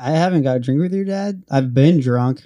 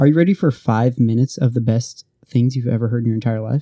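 ordinary delivery

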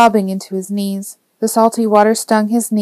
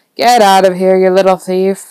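chuckling, louder; 5 dB louder than usual. A man shoos a kid out of the store, chuckling. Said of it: "Ozzy said, chuckling".

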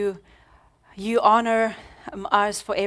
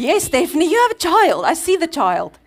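acted-out, loud, swooping scolding tone, pitched up; 8 semitones higher, 8 dB louder than usual. Retelling what Christina says to someone, imitating someone fussing. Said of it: "Christina's fussing at someone".

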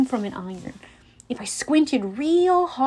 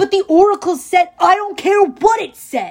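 forceful, furious roaring bellow, loud and high; 7 semitones higher, 7 dB louder than usual. Ares answers Clarisse, who asked him for this quest, bellowing. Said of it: "Ares bellowed with such force".

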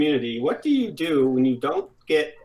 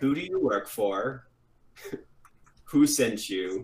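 calm, low, dropped threatening voice; 4 semitones lower, 4 dB quieter than usual. Game player questioning a captive held at gunpoint, in a calm Darth Maul voice. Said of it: "in the calm Darth Maul voice".

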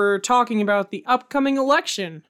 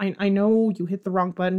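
ordinary talk

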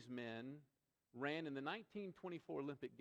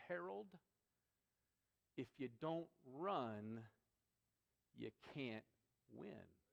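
play-acted calm, composed, settled, unhurried reply. Speaker retells Sybil answering an angry Harold, retelling a calm reply. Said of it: "calmly said to him".

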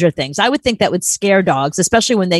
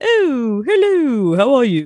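light, high-pitched, put-on British accent; 6 semitones higher than usual. Explaining that the dogs like British TV, the speaker demonstrates a British accent. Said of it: "I find the British, ... Like that".

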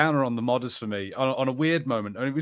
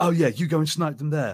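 put-on TV-style British accent, faster. Complaining about a group's accent, the speaker imitates them in a TV British accent. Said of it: "they have a certain British accent".

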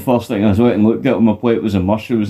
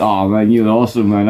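ordinary talk, nothing marked

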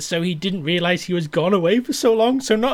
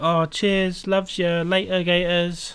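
put-on British accent, twee and slow. Joking about a twee British stereotype role, in a mock twee British accent. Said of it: "A twee little British man who's like".

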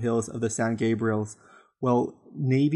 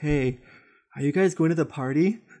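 put-on dazed, stoned, spaced-out voice; 3 semitones higher than usual. Retelling what a dude from the bushes said: imitating a stoned guy. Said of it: "really stoned".

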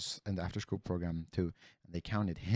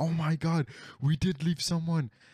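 put-on very high, loud, panicked freaking-out outburst; 10 semitones higher, 6 dB louder than usual. Retelling a woman recounting the kids after hearing one was left, imitating someone freaking out. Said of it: "started fucking freaking out".

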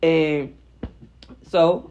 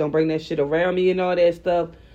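normal talking voice

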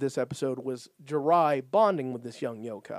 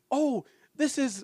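play-acted shrill, very high scream, as if distant; 11 semitones higher than usual. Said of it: "screaming at ya".

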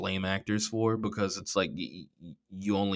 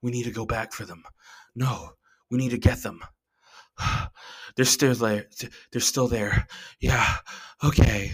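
mocking, breathy, breathless TV drama acting; 3 semitones higher than usual. Mocking the dialogue in the Man in the High Castle: mocking breathy TV drama acting. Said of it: "that kind of breathy T V acting".

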